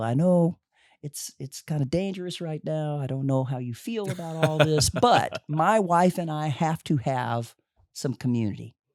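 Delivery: mildly pleading voice called out over a distance. Retelling an invitation called out from six feet away: imitating Manute yelling. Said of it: "And he's yelling".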